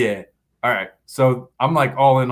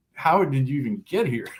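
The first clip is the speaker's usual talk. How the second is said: acted scoffing, mocking jeer through laughter; 5 dB quieter than usual. Retelling how an old guy came over laughing at the speaker, imitating mocking laughter. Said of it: "just laughing at me like".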